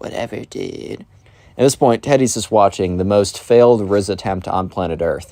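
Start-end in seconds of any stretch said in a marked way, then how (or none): 0.0-1.0 put-on mumble under breath, much quieter. Retelling a spoiled kid's reply to a teacher's warning, retelling a mumble under breath. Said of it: "Mumbles under his breath".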